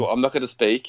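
ordinary talk

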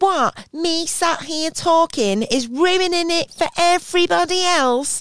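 very high-pitched, slow, drawn-out angry complaining. Retelling a woman kicking off at a show: imitating a woman kicking off. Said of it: "a woman started kicking off".

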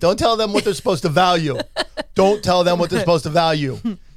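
loud, joking, emphatic, repeated twice. Speaker giving advice to couples, repeating a warning, said jokingly. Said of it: "So I'm saying that jokingly".

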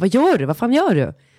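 acted, drawn-out cry, slow and mild. Retelling being woken by him tickling, acting out screaming at him. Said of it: "börjar jag typ så här skrika på honom och bara".

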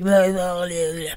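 mimicked sore voice. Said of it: "my voice is all like".

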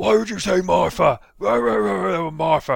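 high, loud, mocking impression.

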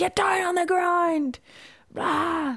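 very high, shrill screamed shout. Recounting a gritty gym class where big men were screaming: retelling someone screaming. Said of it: "They were like screaming".

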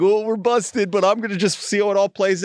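mock friendly, joking tone. Retelling what a man in line said: imitating a congenial, funny tone. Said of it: "he says it in a very, like, congenial, like, funny".

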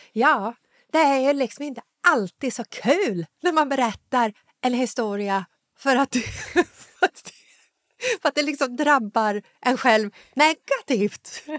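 northern Swedish dialect.

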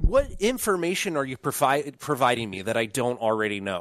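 ordinary talk, nothing marked

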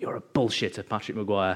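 threatening, menacing, low, breathy growl. Retelling a surprise phone call while on the bus: imitating Kilroy's menacing low breathy growl. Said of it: "really menacing, low, breathy growl".

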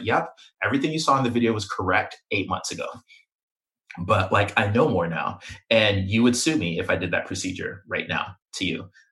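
ordinary talk, nothing marked

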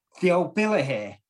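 mock sudden, loud called-out shout. Retelling a lock-in when the police arrive, imitating someone shouting out. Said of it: "someone shouts out".

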